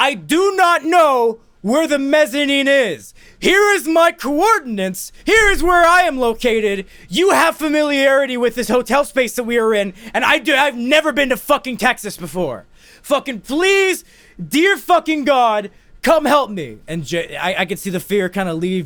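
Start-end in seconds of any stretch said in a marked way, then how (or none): 0.0-16.8 very loud, high-pitched, frantic, acted panic. Lost in a hotel, on the phone with Schindler, retelling speaking very loudly. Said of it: "So I say very loudly".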